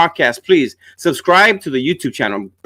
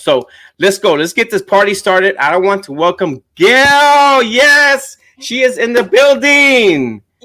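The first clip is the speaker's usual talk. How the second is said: thrilled, eager, pitched-up host energy; 5 semitones higher, 4 dB louder than usual. Host opening the show and welcoming a guest; excited. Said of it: "If you could tell in my voice".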